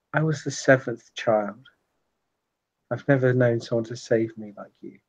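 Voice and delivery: intimate, soft, close, voiceless half-whisper. Voicing a woman speaking to you right after a long kiss, half-whispering. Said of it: "she kind of whispers to you".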